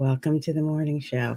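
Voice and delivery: on-air host, radio announcer voice. Mocking the style you don't want for a morning show: NPR voice. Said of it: "what I call the N P R voice".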